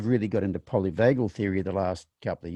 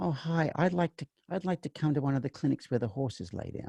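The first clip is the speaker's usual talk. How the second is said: put-on elderly woman voice, much higher; 6 semitones higher, 5 dB quieter than usual. Retelling a phone call from an elderly woman, imitating an elderly woman. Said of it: "she sounds like she's elderly".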